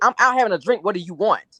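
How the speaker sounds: put-on irritated man's voice. Retelling a late-night phone call, imitating irritated Marceau. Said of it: "he sounded real irritated".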